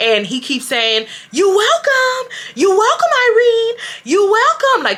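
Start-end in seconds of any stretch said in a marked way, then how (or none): 1.3-4.8 very high, shrill screaming, repeated over and over. Retelling how he kept calling out during the walk out: imitating him screaming. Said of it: "he's screaming it".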